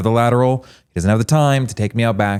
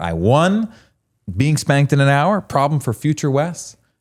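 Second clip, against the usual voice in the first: mock self-satisfied, smug, pitched-up musing voice; 5 semitones higher than usual. Retelling own past thoughts after hearing a remark: imitating own smug self. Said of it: "I'm sitting there smug".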